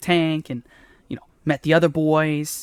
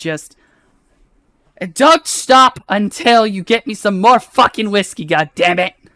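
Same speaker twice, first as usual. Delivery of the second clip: put-on loud, slightly drunk, tipsy, boozy voice; 5 semitones higher, 9 dB louder than usual. A voice heard right after a cup slams into the wall, slightly drunk. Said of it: "a almost slightly inebriated voice".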